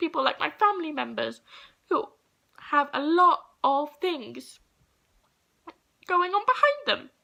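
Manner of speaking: crying, tearful, halting, voice breaking. A speaker apologizes to listeners for crying mid-speech; crying while speaking. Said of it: "I'm sorry I'm crying".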